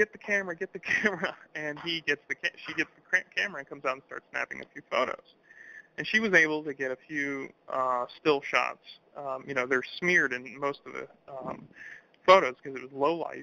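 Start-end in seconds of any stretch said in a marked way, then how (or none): 0.0-1.4 put-on yell, high and urgent. Retelling a witness yelling at his wife to fetch the camera: imitating someone yelling. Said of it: "yelling at her".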